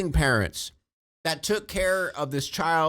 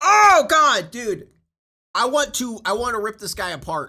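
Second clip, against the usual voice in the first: furious, pitched-up, boiling-over rage; 6 semitones higher, 6 dB louder than usual. Reacting to a man mocking his dead child, the speaker vents, furious. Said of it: "I have not been this angry in a while".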